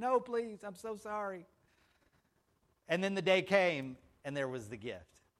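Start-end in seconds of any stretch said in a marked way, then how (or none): 0.0-1.5 slow, weeping, wailing voice. Retelling pleading with her not to take the gift back, mock wailing plea. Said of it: "I wailed, I weeped".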